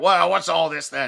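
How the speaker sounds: put-on older gentleman voice. Acting out an older man in an ascot answering the door: older man in an ascot voice. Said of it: "an older man in an ascot comes out and it's all like".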